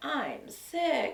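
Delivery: pitiful, feeble, little high sickly voice. Speaker retells a man calling to say he was sick, imitating a pathetic little voice. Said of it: "with that pathetic little voice and said".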